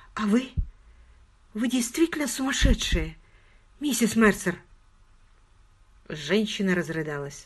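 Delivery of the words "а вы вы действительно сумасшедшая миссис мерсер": put-on scared, frightened, like a little child. She asks a woman a question, very slowly, frightened, childlike. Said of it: "Очень медленно, очень испуганно и совсем по-детски она спросила".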